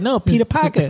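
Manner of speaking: put-on New York accent. Retelling an online video, quoting a wife: new york accent. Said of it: "that accent is crazy".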